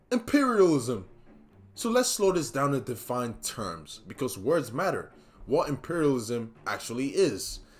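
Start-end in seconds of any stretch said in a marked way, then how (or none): 0.1-1.0 loud, high screamed voice. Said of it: "someone immediately screams out one word".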